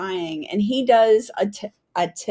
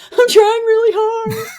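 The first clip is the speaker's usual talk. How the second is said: very high, loud, tearful blubbering; 13 semitones higher, 8 dB louder than usual. Retelling what the speaker said while yelled at, imitating own blubbering. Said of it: "and I'm blubbering".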